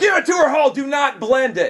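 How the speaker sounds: high-pitched, righteously indignant, loud shout. Recounting an order at a restaurant, retelling a yell at the waiter. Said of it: "I yelled at the waiter".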